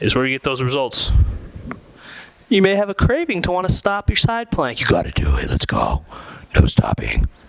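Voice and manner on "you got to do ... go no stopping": deep, low, rough growling voice. Coaching everybody through a side plank; Batman voice. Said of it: "It's my Batman voice".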